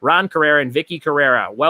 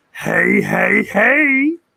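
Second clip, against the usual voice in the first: rough, raspy, pitched-up cartoon-style voice; 6 semitones higher than usual. Doing a requested voice, Fat Albert voice. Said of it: "I was trying to get you to say it in the Fat Albert voice. ... Is that close enough for you".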